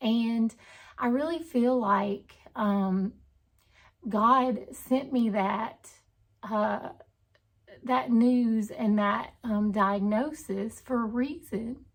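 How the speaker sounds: emotional, choked-up voice full of feeling. Sharing how a diagnosis changed her life, getting emotional. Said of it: "I really get emotional when I talk about this".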